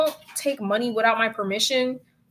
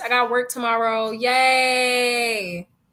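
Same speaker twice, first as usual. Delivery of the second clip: sarcastic fake enthusiasm, slow, drawn-out "yay". Addressing listeners who send in stories, with fake excitement. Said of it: "Y'all hear the excitement in my voice?".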